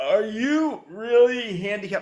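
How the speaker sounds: put-on drunk voice, very slow. Recalling drunk people coming up after a show: imitating a drunk person. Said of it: "That's my impression of a drunk person".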